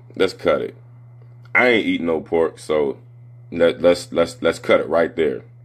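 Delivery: ordinary talk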